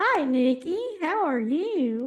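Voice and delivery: very high put-on Southern woman's accent. Showing another speaker one of their different voices: Southern female voice. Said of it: "I'm gonna do a Southern female".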